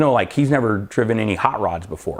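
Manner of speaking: ordinary talk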